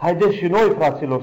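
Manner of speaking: rousing call.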